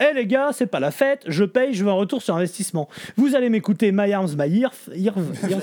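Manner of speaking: ordinary talk, nothing marked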